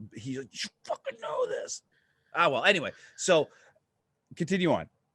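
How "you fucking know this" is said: play-acted whisper-shout. Speaker says his buddy Brady, watching, yells at him: imitating Brady screaming. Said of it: "he's screaming at me right now".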